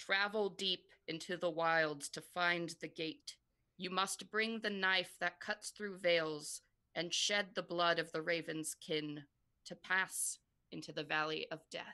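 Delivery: many voices speaking in unison, layered, prophetic-sounding. Narrating the sisters speaking in unison to the players, in a multifaceted voice of prophecy. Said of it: "speak in unison in this kind of voice that's multifaceted and you recognize as a voice of prophecy".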